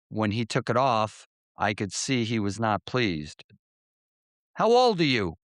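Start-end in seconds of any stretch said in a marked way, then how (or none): 4.5-5.3 put-on thick, heavy, strong Brooklyn accent, pitched up. A patrolman questions the narrator who stopped a Vespa, strong Brooklyn accent. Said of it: "in a Brooklyn accent even stronger than mine".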